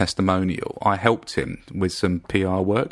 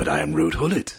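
utterly earnest, deadly serious, no joke; 3 semitones lower than usual. Retelling what a man said when told he couldn't get in without an invite: mock deadly serious. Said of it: "deadly seriously".

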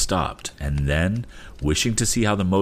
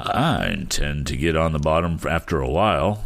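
ordinary delivery

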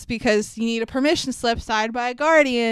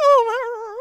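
play-acted whiny, tearful, very high whimpering cry; 12 semitones higher, 3 dB louder than usual. Mocking a movie character who falls apart when hurt: imitating Malfoy whimpering. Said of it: "he turns into a puddle".

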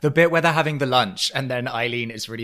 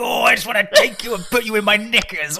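very high, saucy, campy, suggestive voice; 9 semitones higher, 4 dB louder than usual. Cooing at a pet donkey for a joke: Sid James voice. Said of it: "It's a bit Sid James".

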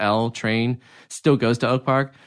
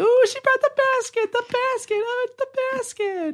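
very high mock squealing, sarcastic over-eager delight. Retelling the others' reaction when Charlotte brings the basket: imitating sarcastic excitement. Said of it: "sarcastically excited for it".

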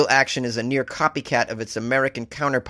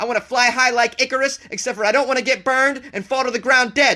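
mock wired, jittery ranting, higher; 11 semitones higher than usual. Acting out a customer suing Red Bull for no wings: put-on hyper caffeinated rant. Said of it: "That's why I'm talking like this".

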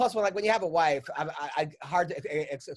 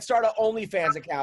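ordinary talk, nothing marked

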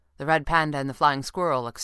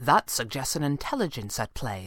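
ordinary delivery, nothing marked

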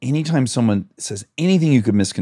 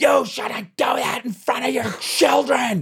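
mock, very high, shrill, berating yell. Retelling strangers yelling at a friend out the window: imitating strangers screaming. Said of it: "screamed at him out the window".

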